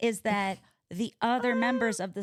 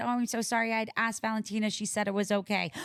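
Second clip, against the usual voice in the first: normal talking voice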